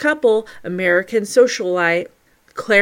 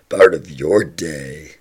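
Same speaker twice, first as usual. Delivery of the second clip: put-on monster-style voice. Podcast host thanking listeners for stopping by, in a monster voice. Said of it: "that monster voice".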